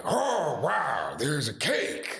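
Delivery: very slow, drawn-out put-on voice with swinging pitch. Showing an early impression bit about a birthday. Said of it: "Here's Al Pacino's birthday".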